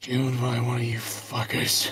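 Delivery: muttered under the breath. A man stares up at the players' characters: muttered under his breath. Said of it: "under his breath".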